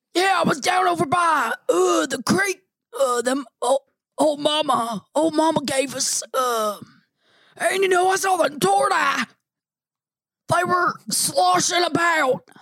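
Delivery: put-on grandpa character voice. Taking over the Crapaw character bit: put-on Grandpa character voice. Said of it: "you're the new Crapaw".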